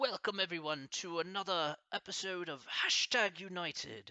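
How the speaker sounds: bad fake British accent. Speaker trying out a british accent on an episode welcome, terrible british accent. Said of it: "Can I try a British accent?".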